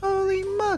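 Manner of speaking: put-on British accent. Streamer showing viewers his british accent: put-on british accent. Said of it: "That's my British accent for you".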